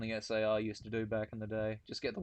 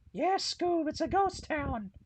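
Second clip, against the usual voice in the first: put-on cartoon slacker voice, higher and louder; 5 dB louder than usual. Acting out a scene of the cartoon: yelling Scooby-Doo voice. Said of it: "Scooby and Shaggy just yelling".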